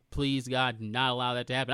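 ordinary delivery

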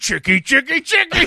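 full pirate voice, shrill, very loud and high. Podcaster retelling a horror movie villain's quip to co-hosts, Freddy quip gone full pirate. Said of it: "went full pirate".

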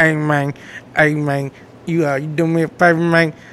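put-on mumbling voice. Imitating how Daddy Long Neck talks: Daddy Long Neck mumble voice. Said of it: "He got that mumble voice. Like".

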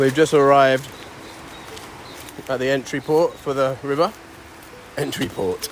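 words spoken while chewing, mouth full. Arriving at the river's entry port, speaking with mouth full. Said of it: "I've got a mouthful of cacao".

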